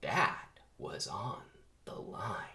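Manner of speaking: dark, ominous, foreboding tone. Retelling a movie scene, the speaker voices a character in a put-on ominous Ken voice. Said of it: "says Ken in his ominous voice".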